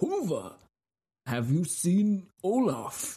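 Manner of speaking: put-on Nordic accent, inquisitive tone. A Viking on a ship heading towards battle questions his companion, put-on Nordic accent, inquisitive Viking. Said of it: "it sounds Nordic, like an inquisitive Viking on a ship heading towards battle, asking his long-standing female companion a question".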